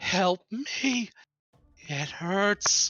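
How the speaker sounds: put-on tiny little girl's voice, echoing and very slow. Voicing a creature crying out when hit: small childlike girl's voice. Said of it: "the small, childlike girl's voice echoes out".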